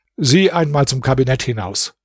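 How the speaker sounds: ordinary delivery, nothing marked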